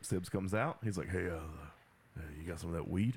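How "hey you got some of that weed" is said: low, dropped action-hero voice, superhero-style. Acting out Sibs coming out of the door and asking for weed, in a Batman voice. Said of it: "You sound like Batman buying drugs".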